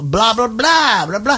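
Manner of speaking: put-on Southern belle accent. On your podcast, pick apart her accent by mimicking it in a Southern belle voice. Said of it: "she's talking like this Southern belle".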